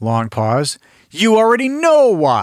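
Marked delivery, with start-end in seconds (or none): 1.1-2.4 forced, stilted overacting, loud and swooping. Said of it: "Lines were delivered like this".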